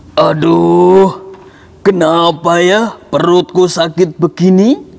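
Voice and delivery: big, slow voice with "Aduh" drawn out. Telling a story, the little turtle groans in big Nyunyu voice. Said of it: "Kita memakai suara besar ini ya".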